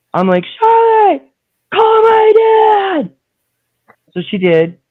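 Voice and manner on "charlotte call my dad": mock very high, loud, drawn-out scream. Retelling shouting across the sheriff's office: retelling a scream. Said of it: "I'm screaming across the precinct".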